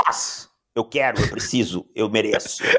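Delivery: mock, imitated demanding tone. Imagining how he would demand a say in the story: imitating him demanding a say. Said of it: "imaginar o Leila Torraca falando que ele te-".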